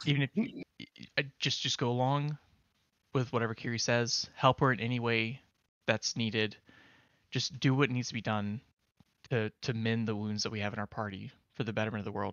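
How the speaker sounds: quiet, hushed, urging tone. A player's character keeps urging Stug to help Kiri, in a hushed tone. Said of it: "in in sort of a hushed tone".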